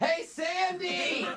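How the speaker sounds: very high yell with one word drawn out. Calling across the office to someone during a phone call: yelling across the office. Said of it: "Can you stop yelling at each other?".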